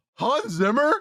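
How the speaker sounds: mock very high, blurted, disbelieving outburst. Retelling seeing a name at a movie's start: imitating an out-loud exclamation. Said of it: "I literally out loud in this theater went".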